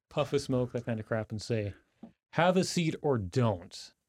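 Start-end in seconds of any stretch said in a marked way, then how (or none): 2.3-3.9 amplified, booming, slow, ominous menacing voice. A player's character uses prestidigitation to intimidate others, speaking incredibly loudly. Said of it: "speak incredibly loudly".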